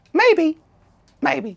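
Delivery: very high-pitched cartoon mouse voice. Playing a scene with a partner, performed in a Mickey Mouse voice. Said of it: "I will be Ilya as Mickey Mouse".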